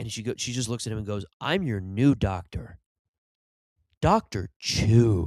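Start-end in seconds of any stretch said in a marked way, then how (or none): 1.4-5.3 mock, very slow, needling, taunting delivery. Retelling a doctor's line to a patient in a movie scene: imitating a taunting delivery. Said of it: "she's almost taunting him".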